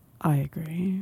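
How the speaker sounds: grave, solemn put-on voice full of gravitas. Agreeing with the other speaker after a segment: put-on voice with more gravitas. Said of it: "That's, that's more gravitas".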